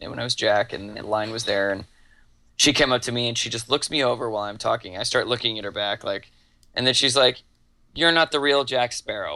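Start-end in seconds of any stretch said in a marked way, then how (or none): 7.9-9.4 mock girl's voice, sassy and full of attitude. Retelling what a girl said while walking up: imitating a girl with attitude. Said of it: "with attitude".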